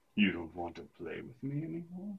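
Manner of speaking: low, very quiet muttered grumble, barely audible. Reading a story aloud, Naomi speaks to Madison, grumbling. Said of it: "She grumbled".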